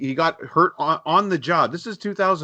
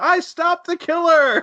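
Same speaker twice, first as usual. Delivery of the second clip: put-on screaming, very high-pitched and drawn out; 14 semitones higher, 4 dB louder than usual. Retelling a movie scene where a character yells in his apartment: imitating Quentin screaming. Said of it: "and he screams".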